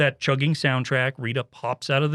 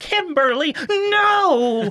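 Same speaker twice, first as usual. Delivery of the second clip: very high, sincere pleading voice, drawn-out "no"; 5 dB louder than usual. Retelling a scene in which Alpha Five protests: imitating Alpha Five's heartfelt plea. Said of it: "And it's so heartfelt".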